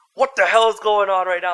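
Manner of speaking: loud, frantic, panicked yelling, losing it. Retelling the power going out mid-intros, retelling yelling. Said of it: "I'm like yelling at the matrices".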